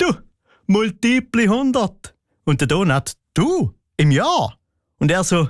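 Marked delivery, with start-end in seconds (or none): 0.0-2.1 spoken through laughter, pitched up. Retelling a man answering Donat's question while walking away, imitating him laughing. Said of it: "Und er sagt lachend beim Weglaufen".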